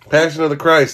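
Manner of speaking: loud yell, shouted right up close. Answering a companion who then complains of being yelled at in the ear, yelling. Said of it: "Why are you yelling at me?".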